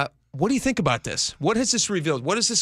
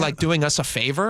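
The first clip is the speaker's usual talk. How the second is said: ordinary talk, nothing marked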